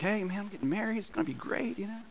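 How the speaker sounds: put-on eager, very soft, high excited tone. Retelling telling a coworker about getting engaged: retelling own excited words. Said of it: "I was excited about it".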